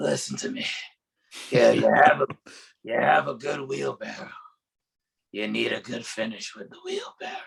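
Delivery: very gruff, rough voice. Recalling advice from a wrestler they trained under, quoting him in Grim Reaper's very gruff voice. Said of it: "in his very gruff voice".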